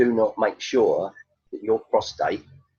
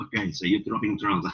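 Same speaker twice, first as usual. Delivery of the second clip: put-on Russian accent in a man's voice; 4 dB quieter than usual. Retelling a comedy routine, voicing a six-foot-four Russian: imitating a Russian man. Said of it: "swapped my little Chinese lady with a six-foot-four Russian".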